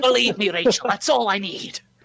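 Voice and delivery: put-on pirate-sounding accent. Speaking in character to Rachel during a role-play scene, pirate voice. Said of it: "Why does [name] sound like a pirate?".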